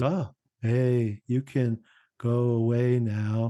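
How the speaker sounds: flat, affectless, dead-level voice, very slow. Mocking an actor's line after facing Satan: affectless James Remar impression. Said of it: "completely affectless".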